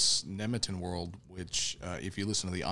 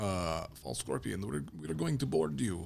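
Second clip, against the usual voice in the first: put-on Russian accent; 2 semitones higher than usual. Retelling a spaceship story, quoting the one who hails the other ship in a russian accent. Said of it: "it's a very good Russian accent".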